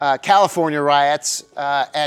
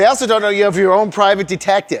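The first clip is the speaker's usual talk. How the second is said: normal talking voice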